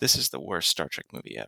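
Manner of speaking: hushed, very quiet, low, under the breath. Recalling what he said, sitting back after Spock died on screen, very quietly. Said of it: "he says very quietly".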